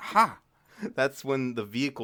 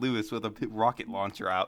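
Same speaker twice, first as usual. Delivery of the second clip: normal talking voice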